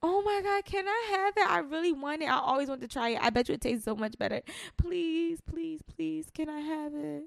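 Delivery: put-on high, childlike pleading and begging. Acting out someone begging at a hookah lounge, mock childlike pleading. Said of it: "just like a child asking his mom".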